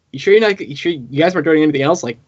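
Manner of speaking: ordinary talk, nothing marked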